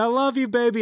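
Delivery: very high-pitched, loud shrieking scream. Retelling a zipline ride, quoting the wife: imitating someone screaming.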